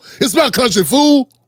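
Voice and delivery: entitled, cocky, possessive tough-guy delivery. Imitating people who sound like Debo, claiming the country. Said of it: "They sound like Debo".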